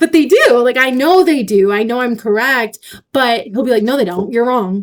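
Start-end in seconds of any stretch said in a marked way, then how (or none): 3.8-4.8 flat, matter-of-fact, unyielding delivery. Acting out what he says to contradict the speaker: mock matter-of-fact. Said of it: "he'll just say it like that. So matter of fact".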